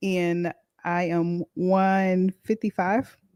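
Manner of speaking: drawn-out delivery. Giving a number while the others compare ages and sizes, said slowly. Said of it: "Why you said all slow like that".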